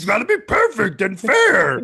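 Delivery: very high, loud, swooping, bouncy puppet voice. Talking about the strike zone box shown to viewers, in a Grover-like voice. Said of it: "You sound like a Sesame Street character".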